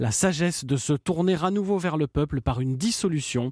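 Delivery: ordinary delivery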